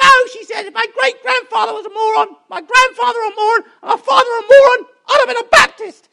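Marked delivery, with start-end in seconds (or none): 0.7-5.9 put-on high-pitched woman's voice. Telling a joke, voice the woman's reply in a high-pitched woman's voice. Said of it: "don't try and do high-pitched voices".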